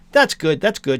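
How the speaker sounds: usual speaking voice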